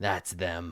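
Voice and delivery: scornful sneering tone. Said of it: "he sneers".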